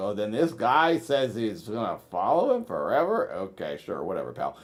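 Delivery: deliberately dumb-sounding, goofy voice. Showing how the movie review could sound: talking dumb. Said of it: "I can still be dumb, Nathan, and talk like".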